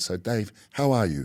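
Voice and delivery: soothing, slow, unhurried, genuinely calming voice. Retelling how the other speaker greeted him: imitating a real calming voice. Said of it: "in this real calming voice".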